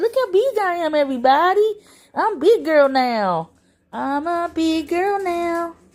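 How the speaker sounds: high, slow, drawn-out puppy voice. Prompting Aria to speak, then talking for her to everybody, voicing Aria.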